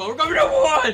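ear-splitting, very high, very loud, shrill excited cheer. Cheering along with others, apologizing for the noise: excited shouting. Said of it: "Sorry if I blew out all your eardrums".

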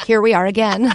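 usual speaking voice

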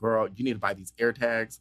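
plain

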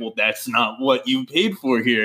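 normal talking voice

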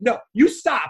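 put-on firm, forceful, heated tone. Retelling a grocery store run-in with an old man, retelling a yell. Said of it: "I'm yelling at this old man".

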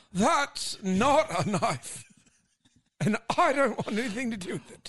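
high nature documentary narrator. Answering what David Attenborough would say: David Attenborough impression. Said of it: "what would David Attenborough say".

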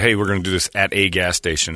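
ordinary talk, nothing marked

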